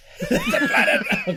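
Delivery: high, loud, slow laughing shout.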